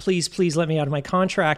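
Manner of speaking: mock bawling, sobbing voice. Retelling how a man begged on the phone, imitating someone bawling. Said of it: "I think he was really bawling".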